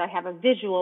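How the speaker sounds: ordinary delivery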